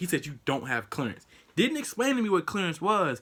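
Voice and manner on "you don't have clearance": normal talking voice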